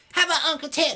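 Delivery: mock high stage voice.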